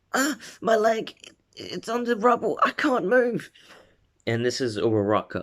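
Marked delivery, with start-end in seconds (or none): 0.1-3.5 very high-pitched, pained yell. Retelling a scene where a girl trapped under rubble yells: Uraraka yelling in pain. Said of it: "a girl yelling".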